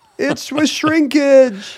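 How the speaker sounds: very high, slow, shivery, mock-complaining tone. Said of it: "he'd be like".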